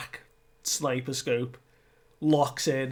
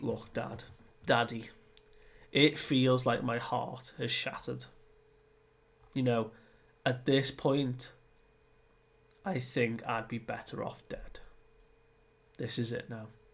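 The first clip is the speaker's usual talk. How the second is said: normal talking voice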